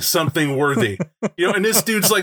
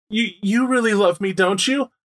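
put-on sniffling. Recapping a scene, voicing a character who looks at the pack, imitating sniffling.

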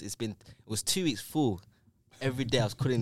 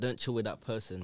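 ordinary talk

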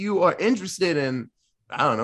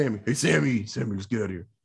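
bad, low, gruff tough-guy voice; 4 semitones lower, 3 dB quieter than usual. Doing an impression of the brother from Supernatural: terrible Dean impression. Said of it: "That was a terrible Dean".

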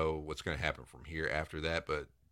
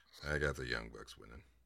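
grudging, reluctant, distasteful, disgusted tone; 5 semitones lower, 8 dB quieter than usual. Repeating a match prediction back to the other speaker: reluctant, disgusted tone. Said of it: "like you're disgusted with the fact that you have to say this".

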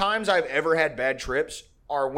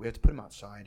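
quiet, flat, stoic deadpan with no emotion; 7 semitones lower, 4 dB quieter than usual. Retelling what a woman said about the dog, imitating her stoic tone. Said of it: "She's like very stoic".

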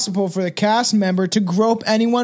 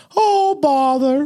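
high-pitched cartoon storybook bear voice; 6 semitones higher than usual. Imagining a costumed performer at his sentencing: Winnie the Pooh voice. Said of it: "in the Winnie the Pooh, the costume when he gets sentenced to go like".

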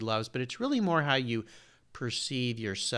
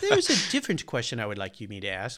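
put-on very British accent with swooping pitch. Retelling what a past guest said: British accent imitating Harold. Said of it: "in his very British accent".

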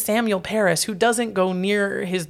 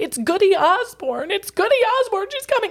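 play-acted very high, rising, mounting shriek; 13 semitones higher than usual. Retelling a courtroom scene, imitating Abigail Williams shrieking and pointing at the ceiling. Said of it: "points and starts shrieking".

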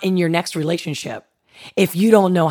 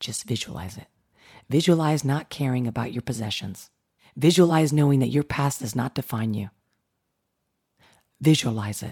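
speaking softly; 5 semitones lower, 7 dB quieter than usual. Speaker addressing the listener directly, guiding them through it, in a soft voice. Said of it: "with this soft voice".

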